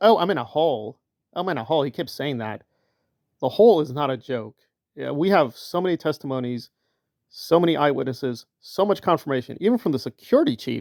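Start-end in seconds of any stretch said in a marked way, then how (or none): 0.0-1.8 acted-out, very mocking, taunting, derisive, ridiculing tone. Retelling a critic's remark: imitating Miriam Francis mocking. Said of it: "very mockingly said".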